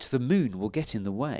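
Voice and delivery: ordinary talk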